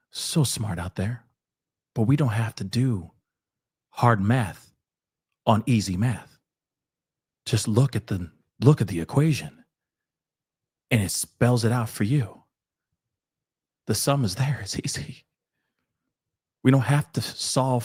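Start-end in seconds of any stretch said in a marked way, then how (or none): 0.1-15.2 nice, gentle, kind, much slower. Repeating a point nicely after an earlier joke, nice and gentle. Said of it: "I'll say nicely and gently again".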